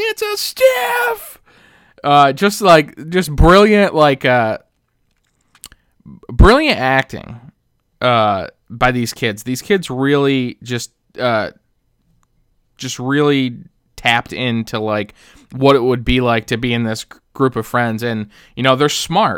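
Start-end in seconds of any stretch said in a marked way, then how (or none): 0.0-1.4 very high, slow, startled shout. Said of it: "Chunk just yells".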